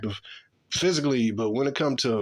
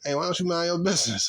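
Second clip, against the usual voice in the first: mocking, sarcastic, pitched-up delivery; 5 semitones higher than usual. Retelling telling someone to mind their business: imitating own sarcastic remark. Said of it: "I said it sarcastically with a smile".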